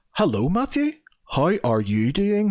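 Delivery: high, swooping, over-precise enunciation of every syllable. Retelling how a man from Belfast greeted him, imitating over-precise pronunciation. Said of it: "you're pronouncing every single syllable".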